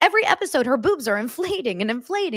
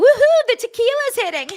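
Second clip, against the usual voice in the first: mock drunk, shrill, loud tipsy whooping cheer; 11 semitones higher, 7 dB louder than usual. Retelling a reality-show cast member tipsy on tequila: imitating someone drunk. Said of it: "I think she's just drunk. She's like".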